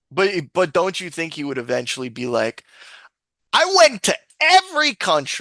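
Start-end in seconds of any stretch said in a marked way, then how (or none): 3.6-5.4 pitched-up, loud, drawn-out sing-song with high swoops. Speaker imagines what he would eventually say, MrBeast impression. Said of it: "That that was a pretty good mister Beast impression".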